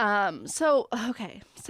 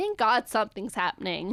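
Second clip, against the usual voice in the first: plain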